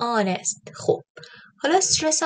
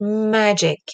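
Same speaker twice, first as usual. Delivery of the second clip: magic: first vowel lengthened and loud; 4 dB louder than usual. Persian-language lesson on English word stress: magic with stretched, louder first vowel. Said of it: "دیدی ا رو کشیدم".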